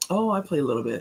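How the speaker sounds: humble, careful, cautious and modest tone. Imitating how good bid whist players describe their own playing: imitating a cautious modest tone. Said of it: "They say it very cautiously".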